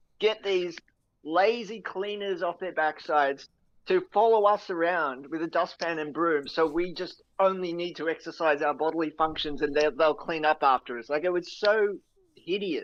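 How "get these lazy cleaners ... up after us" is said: usual speaking voice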